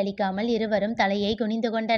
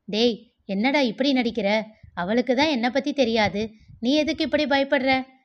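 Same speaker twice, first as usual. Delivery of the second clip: ordinary delivery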